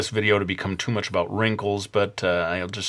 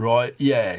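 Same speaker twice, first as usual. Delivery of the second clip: put-on working-class English accent; 3 semitones higher, 3 dB louder than usual. Speaker trying out English accents for listeners, working-class English accent. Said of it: "maybe I need to go more working class".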